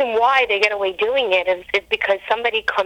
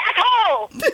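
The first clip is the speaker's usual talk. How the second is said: high-pitched yelling, shouted out loud. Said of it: "she would say".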